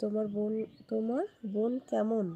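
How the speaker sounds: ordinary delivery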